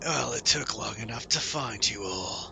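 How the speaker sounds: menacing, foreboding, low, quiet, ominous voice. Voicing an unseen figure who finally finds the group: ominous voice. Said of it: "That was a little ominous sound".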